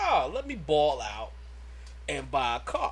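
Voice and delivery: ordinary talk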